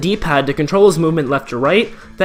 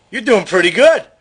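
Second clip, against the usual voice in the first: sudden, put-on New York accent; 4 semitones higher than usual. Voicing a game character who says the player did well: New York accent. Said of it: "Why do I have a New York accent".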